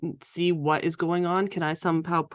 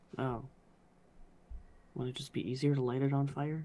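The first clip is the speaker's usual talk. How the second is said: soft, mumbled mutter under the breath; 4 semitones lower, 9 dB quieter than usual. In a roleplay, reacting to another character's fire plan; muttering under her breath. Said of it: "She mutters under her breath".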